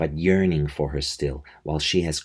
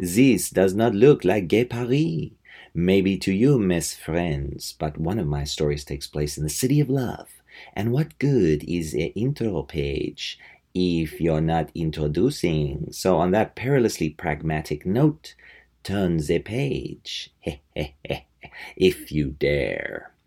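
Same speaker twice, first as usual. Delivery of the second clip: very bad, fake, put-on French accent. Reading a book's intro page aloud as its narrator, in a horrible French accent. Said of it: "my horrible French accent".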